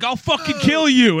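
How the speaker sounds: shrill, very high, loud yell. Telling a story about a ukulele player, the speaker quotes a bicyclist, retelling a yell. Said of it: "some bicyclist yells at him".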